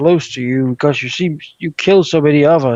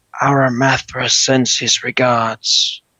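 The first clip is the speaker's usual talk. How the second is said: theatrical stage whisper; 2 semitones lower than usual. Narrating a game, voicing the bugbear creeping up on Marcus, whispering. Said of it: "and then he whispers".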